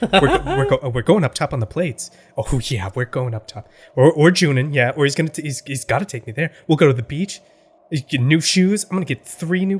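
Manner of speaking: muttered quietly under the breath. Voicing the character Ruby, muttering under her breath. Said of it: "muttering under her breath".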